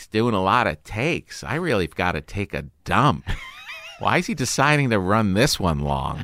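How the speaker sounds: flamboyant, showy showman voice swooping up and down. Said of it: "in his [name] voice".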